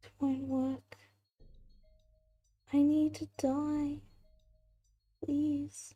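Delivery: weary, tired, flat voice echoing out. In a game, after the attack roll, a voice answers: tired echoing voice. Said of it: "you just hear the tired voice echo out again and say".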